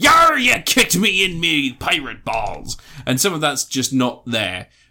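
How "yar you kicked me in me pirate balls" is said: slow, goofy, silly put-on pirate voice. Showing someone at a D and D game doing a silly voice: silly pirate voice. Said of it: "doing a silly voice".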